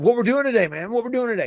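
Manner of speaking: put-on eager excitement, high-pitched and rushed. Retelling what Wyndham said at TV that day: imitating excited Wyndham. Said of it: "he was, like, so excited about it".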